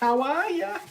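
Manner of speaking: put-on loud, high-pitched Boston accent. A quick greeting as a reference, in a Bill Burr Boston accent. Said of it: "referencing a Boston, a Boston Bill Burr".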